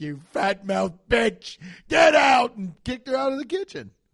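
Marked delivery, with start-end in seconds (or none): 0.0-2.6 very loud raging scream with climbing pitch. Imitating Gordon Ramsay kicking a cook out: Gordon Ramsay screaming. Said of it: "He was like".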